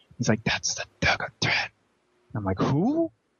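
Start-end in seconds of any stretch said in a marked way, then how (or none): 0.4-1.7 mock quiet whisper. Retelling what someone whispered into the speaker's ear, retelling a whisper. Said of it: "he was whispering so quiet".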